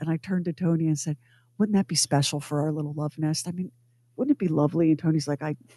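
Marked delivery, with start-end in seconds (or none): 1.6-4.9 put-on deadpan delivery, lower pitch, quieter. Retelling a remark to a companion during a salesman's pitch, put-on deadpan delivery. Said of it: "We played the whole thing completely straight-faced, deadpan".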